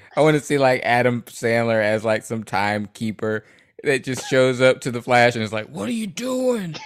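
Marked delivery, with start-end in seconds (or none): 5.7-6.8 put-on grimacing, not-yelling voice, higher pitch. Imitating a timekeeper confronting the Flash: Adam Sandler grimacing voice. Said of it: "You know how Adam Sandler says that?".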